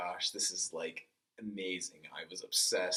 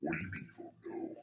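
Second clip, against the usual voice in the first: deep, low, big burly man's coach voice; 4 dB quieter than usual. Retelling a burly coach asking about football: imitating the coach's deep voice. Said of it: "he's got this deep voice".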